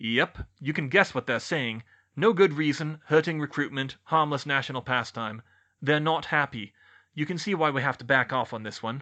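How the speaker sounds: ordinary delivery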